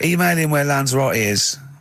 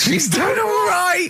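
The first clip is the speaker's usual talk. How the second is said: put-on very high, slow sixty-year-old miner drawl. Repeating another speaker's words back: mock sixty-year-old miner voice. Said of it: "Why do you talk like you're sixty years old?".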